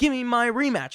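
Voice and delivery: play-acted, high-pitched spoiled child whining. Retelling a woman demanding her rematch from Adam Pearce: mock childish whine. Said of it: "She sounds like a child".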